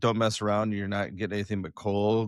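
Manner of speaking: ordinary talk, nothing marked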